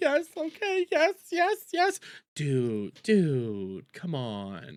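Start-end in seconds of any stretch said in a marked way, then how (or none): 0.0-2.0 very high, slow, stretched-out voice. Painting a mental picture for the others, acting out Jer's reply: imitating Jer. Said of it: "And Jer just go like".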